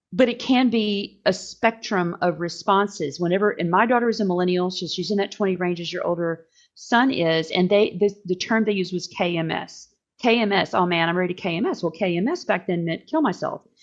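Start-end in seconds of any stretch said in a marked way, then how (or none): 10.2-11.8 mock flippant, offhand tone. Imitating how the kids would say it: imitating a flippant remark. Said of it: "they would say it flippantly".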